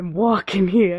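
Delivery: put-on New York accent. Recalling stereotypical New Yorker voices that made the speaker laugh, New Yorker voice. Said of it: "Other New Yorker voice".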